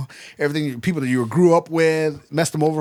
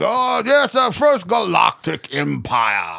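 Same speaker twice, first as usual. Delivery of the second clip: imitated, altered, rough, ruined-throat villain voice; 3 semitones higher than usual. Mocking a villain whose voice suddenly changed, imitating Palpatine's altered voice. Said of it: "what happened to your throat".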